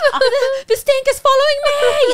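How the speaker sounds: put-on accent of Arabic speakers.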